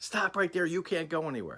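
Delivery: high, insistent screaming voice. Retelling a trooper's orders at the door: imitating someone screaming. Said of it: "screaming at me".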